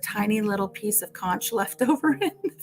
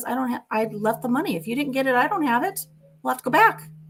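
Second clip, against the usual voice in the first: put-on loud voice, higher pitch; 4 semitones higher than usual. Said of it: "he said it loud enough so that they could hear".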